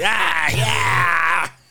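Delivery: raspy, shouted groan. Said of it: "Do they have that raspy ass?".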